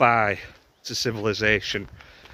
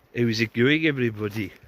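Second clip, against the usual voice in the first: dreadful put-on Scottish accent. Greeting viewers at the start of a video: dreadful put-on scottish accent. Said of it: "This is my dreadful Scottish accent".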